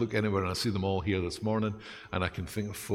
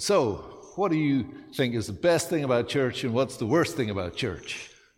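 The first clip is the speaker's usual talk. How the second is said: loud, terrible put-on American accent; 4 semitones higher, 5 dB louder than usual. Retelling a man's question to them during a pulpit exchange, terrible American accent. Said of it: "That's a terrible accent".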